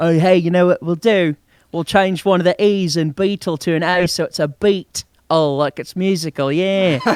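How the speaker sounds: clumsy, bad, fake British accent. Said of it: "my my my British accent uh, is not very good".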